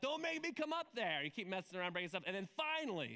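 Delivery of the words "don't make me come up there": put-on, raised, pitched-up yelling. Retelling how a dad on the couch yells upstairs: imitating a dad yelling. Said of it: "so he yells".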